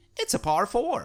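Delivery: exaggerated American accent. Contrasting two voice actors' versions of a sentence, doing the american one. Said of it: "That was a good American accent".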